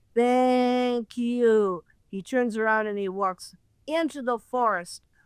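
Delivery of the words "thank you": flat, mechanical robot voice. Retelling what a figure said before walking into the forest, robotic voice. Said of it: "he says in a robotic voice".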